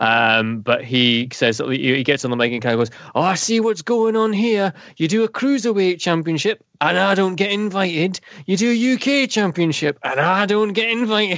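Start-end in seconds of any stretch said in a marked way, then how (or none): 3.1-11.4 put-on Newcastle Geordie accent. Retelling what a man said when he got on the mic, in his geordie accent. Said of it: "all in his Geordie accent".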